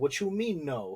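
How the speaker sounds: ordinary delivery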